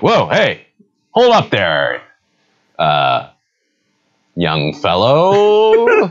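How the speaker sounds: dashing, drawn-out, high, swooping swashbuckling voice. Voicing a dashing character who stops the players: dashing character voice. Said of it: "he's just like".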